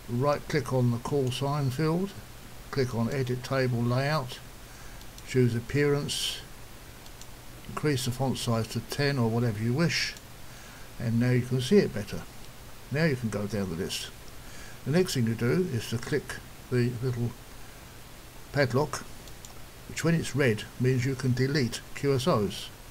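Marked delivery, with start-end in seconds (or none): 0.1-10.1 slow, deliberate, step-by-step delivery. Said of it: "I'll just do that again slowly".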